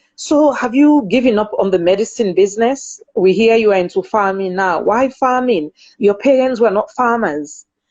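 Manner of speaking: ordinary delivery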